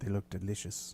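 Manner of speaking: wasp character voice. Voicing a wasp that speaks to the queen about the party: voicing a wasp. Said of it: "you hear one of the wasps say to the queen".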